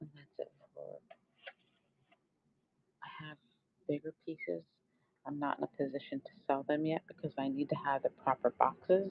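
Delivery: soft half-whisper with no voice at all. Speaker half-whispers because her husband is sleeping in the bedroom above. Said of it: "I'm whispering".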